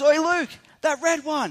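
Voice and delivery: very high, drawn-out, loud called-out shout. Retelling how Bob called out to another man, imitating Bob yelling. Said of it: "so Bob yells out to".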